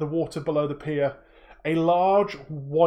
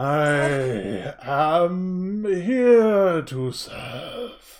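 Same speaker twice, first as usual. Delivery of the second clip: very slow, booming, low, guttural giant whale voice. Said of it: "a booming, low, guttural voice".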